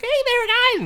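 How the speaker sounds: put-on very high, small childish little kid voice. Retelling how a son greeted people a year ago: imitating a child's voice. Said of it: "'Cause one year he's like".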